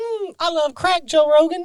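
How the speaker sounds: very high comic character voice, pushed way up. Retelling doing a Tyrone Biggums voice: imitating Tyrone Biggums voice. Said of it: "the Tyrone Biggums voice".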